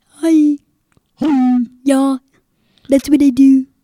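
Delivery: very loud, silly, goofy put-on boy voice. Describing a boy to someone asking about him, the speaker imitates his weird voice. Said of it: "he talks in the voice like".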